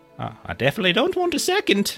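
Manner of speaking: mumbled, muttered delivery. Voicing a scolded hobbit husband answering his wife: mumbling hobbit husband. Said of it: "You hear him mumble like".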